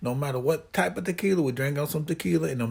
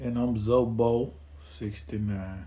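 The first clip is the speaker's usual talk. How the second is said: flat, unexcited voice with zero enthusiasm; 5 semitones lower, 3 dB quieter than usual. Co-host introducing himself after the host opens the podcast, zero enthusiasm. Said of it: "You said that with zero enthusiasm".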